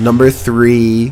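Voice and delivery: deep, low, slow announcer voice.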